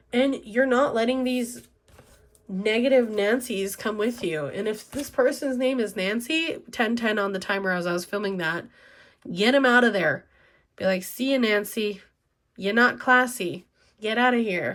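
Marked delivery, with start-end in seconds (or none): 11.0-14.7 put-on New York accent. Speaker acts out sending away a person named nancy, in a new york accent. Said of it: "I don't know why I have a New York accent".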